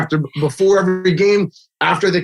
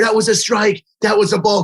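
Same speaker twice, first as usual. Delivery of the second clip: mock loud yelling dad voice, calling out; 3 semitones higher than usual. Retelling a dad yelling at the umpire: imitating a dad yelling. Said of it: "he's yelling at the umpire".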